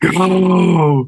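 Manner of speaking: high, drawn-out, bubbly, grinding raspy growl. Voicing the mysterious voice again: bubbly grindy raspy voice. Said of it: "That one sounded good".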